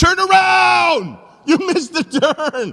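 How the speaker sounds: loud, very high, slow, drawn-out shouting yell. Recalling a driver heading the wrong way, speaker re-enacts yelling at the phone. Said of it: "now I'm yelling at the phone like he can hear me".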